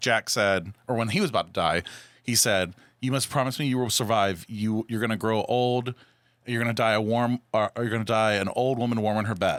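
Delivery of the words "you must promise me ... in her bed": ordinary talk, nothing marked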